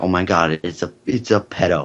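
ordinary talk

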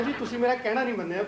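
plain

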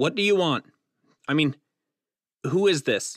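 loud, panic-stricken tone. Reading a thriller aloud, voicing a man answering a mystery caller: panicked. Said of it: "He sounded panicked".

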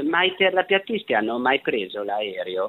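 normal talking voice

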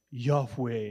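mock heavy stress on the word yahweh. Retelling how a professor always said the word: imitating a professor stressing yahweh. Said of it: "used to really emphasize that word".

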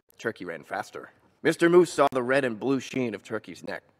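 ordinary delivery

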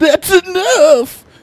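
shrill, booming, very high, very loud shout. Retelling the plant draining his blood, imitating Seymour shouting. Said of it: "And he'd be like".

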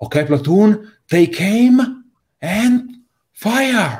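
very high-pitched, screaming voice. An officer commands his platoon to fire, officer screaming orders. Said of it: "an officer voice screaming".

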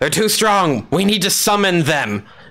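restrained, mild, held-back yell. Voicing a cultist calling out to the other cultists: yelling. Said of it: "he yells to the other cultists".

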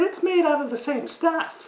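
very high-pitched, mocking, parroting mimic voice. Echoing a woman's remark straight back at her, in a mocking imitation of her voice. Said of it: "Why are you mocking me?".

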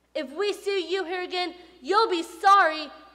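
high, very loud shouting yell. Occupants of shabby rooms warn off a preacher who visited them: shouting. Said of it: "they shouted".

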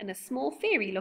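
ordinary delivery, nothing marked

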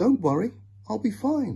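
very high reassuring voice. Narrator reads a child, told to go to bed, reassuring Mother. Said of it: "Katrina reassured Mother".

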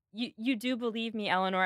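ordinary talk

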